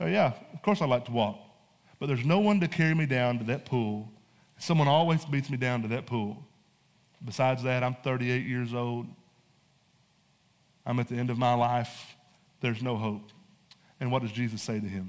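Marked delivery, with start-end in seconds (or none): 0.0-13.3 mock, snarky, sarcastic delivery. Retelling the man's answer to Jesus: imitating a sarcastic reply. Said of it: "kind of sarcastic".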